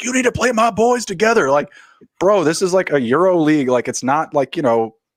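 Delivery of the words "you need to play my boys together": very high-pitched, loud screaming. Retelling a father screaming at the coach: imitating a father screaming at a coach. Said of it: "screaming at the coach".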